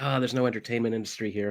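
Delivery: ordinary talk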